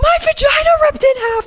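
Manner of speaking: very high, loud, shrieking scream. Retelling a classmate's outburst during class, imitating her scream. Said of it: "And then she just screams".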